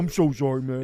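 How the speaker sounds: put-on drunken, remorseful, apologetic pleading voice. Retelling a friend apologizing later after drinking: imitating Hogan drunk and apologetic. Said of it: "then he'd get drunk and be like".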